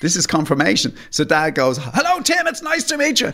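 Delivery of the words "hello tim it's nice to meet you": put-on shouting, higher pitch. Retelling a father greeting a boy he thought was deaf: imitating someone shouting. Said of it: "Dad thinks Tim is deaf".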